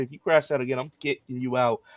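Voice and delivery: normal talking voice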